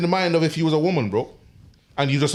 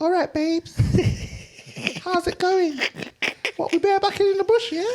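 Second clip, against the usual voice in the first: put-on girly voice, much higher pitch. Egged on by a friend, trying out a girl voice. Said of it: "try do a girl voice".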